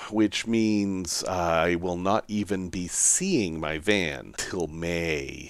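slow, soft and sad.

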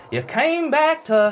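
put-on high, slow elderly preacher voice.

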